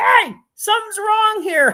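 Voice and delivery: very high, loud yelling shout. Retelling how YouTube reacted to stopped advertising: imitating someone yelling. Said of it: "YouTube yelling at me like".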